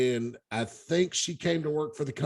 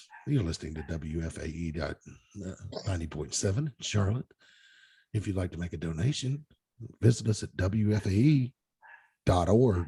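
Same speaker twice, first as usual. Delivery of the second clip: easygoing, laid-back public radio announcer read; 8 semitones lower than usual. Doing an on-air station announcement in NPR announcer voice. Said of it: "I can do my N P R voice".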